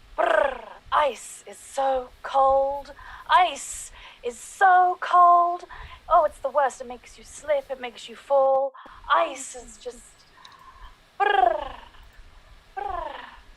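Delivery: loud, high, dramatic theatrical stage delivery. Performing a requested thirty-second monologue about ice: dramatic monologue. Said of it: "do a dramatic monologue on the theme of ice".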